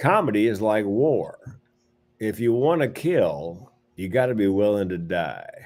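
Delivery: tough-guy character voice. Telling others the quote that opens a movie on screen, sounding like Clint Eastwood. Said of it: "you sounded like fucking Clint Eastwood there".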